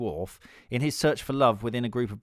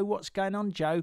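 broad, casual Cockney accent; 9 semitones higher than usual. Recalling playing Pip as a boy in Great Expectations, asking Joe: Pip's Cockney accent. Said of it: "he had a Cockney accent like this".

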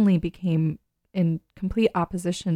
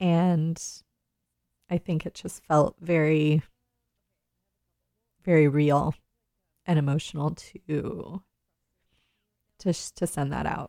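crying while talking. Radio host talking about announcing the show's end, crying while talking. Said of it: "why I'm crying now".

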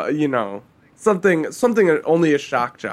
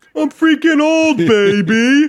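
put-on very high, loud, drawn-out holler, baby stretched; 11 semitones higher, 5 dB louder than usual. Joking about the sportscaster being eighty-three: Dick Vitale voice. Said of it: "back to Dick Vitale".

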